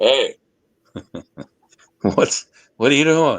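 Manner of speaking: big, booming, shouted voice. Recalling what you'd hear if you didn't do it right: big booming voice. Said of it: "his big booming voice go".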